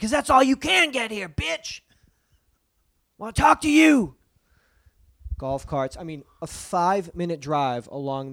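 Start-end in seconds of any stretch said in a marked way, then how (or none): 0.0-4.2 put-on shout, higher and louder. Retelling driving up to a compound: retelling own yell. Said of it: "I yelled out".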